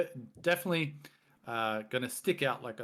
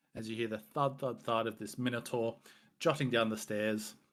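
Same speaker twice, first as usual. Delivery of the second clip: ordinary talk, nothing marked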